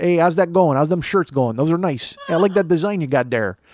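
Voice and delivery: full-on, put-on Chicago accent. Retelling what Boomer said on the phone: imitating Boomer's Chicago accent. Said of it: "he's all Chicago".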